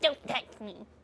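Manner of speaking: mock icy, cold whispered tone. Retelling a scene where a character pushes another away, imitating his voice. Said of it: "Exactly like that voice".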